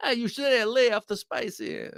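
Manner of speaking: exaggerated, over-the-top Italian accent, pitched very high. Answering a viewer who asked for the line again: over-the-top Italian accent. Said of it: "say it with an over-the-top Italian accent too".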